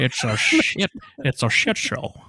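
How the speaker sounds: terrible put-on star voice, very slow, swooping, drawn out. Commenting on the movie, doing a bad Sean Connery impression. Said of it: "definitely the worst Sean Connery the world's ever heard".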